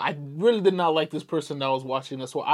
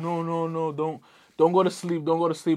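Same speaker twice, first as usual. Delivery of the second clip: mock crying, tearful sobbing voice. Retelling what a mother said in the car: imitating mom crying. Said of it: "my mom crying".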